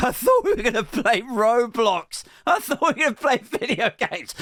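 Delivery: put-on tearful, sobbing, high little child's voice. Speaker retells their son's complaint during a food shop, imitating a crying child. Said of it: "my son's next to me crying like".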